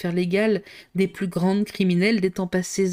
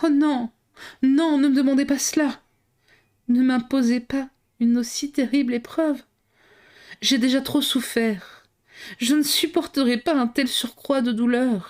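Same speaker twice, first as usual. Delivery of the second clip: hoarse, rasping, high, despairing pleading cry; 5 semitones higher than usual. Reading a novel aloud, a count begs her not to ask: hoarse, despairing pleading voice. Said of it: "d'une voix rauque, où il y avait à la fois tous les désespoirs et toutes les prières".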